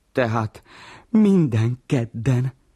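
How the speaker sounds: beaming, joyful, high and loud. One character replies to another's answer, beaming. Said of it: "virul Vacska Mati".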